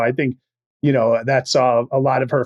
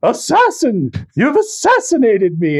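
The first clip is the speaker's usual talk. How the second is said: mock very high yelling, pitch swooping all over; 11 semitones higher, 4 dB louder than usual. Describing a movie character who blames others, acting out her line: retelling a yell. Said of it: "And she's yelling".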